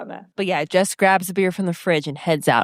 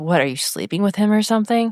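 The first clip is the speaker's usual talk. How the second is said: ordinary delivery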